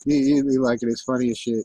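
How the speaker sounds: plain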